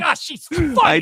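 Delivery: mocking imitation. Mocking how the other speaker praises a comedian, mocking imitation of other speaker. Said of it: "You're just like".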